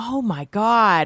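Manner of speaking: put-on starstruck fan voice, gushing, thrilled, overwhelmed. Retelling how a reviewer answered a surprise phone call: imitating a starstruck fan. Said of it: "acted like a total fan".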